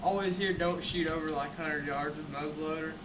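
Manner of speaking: ordinary talk, nothing marked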